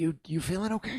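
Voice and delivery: soft, quiet, hushed half-whisper. Putting a hand on a companion's shoulder in character: half-whispering.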